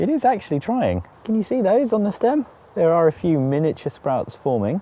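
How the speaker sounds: high, sarcastic, with mock delight. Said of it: "obviously I am being sarcastic".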